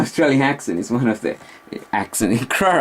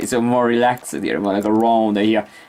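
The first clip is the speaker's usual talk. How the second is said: ordinary talk, nothing marked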